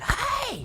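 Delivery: very high-pitched scream.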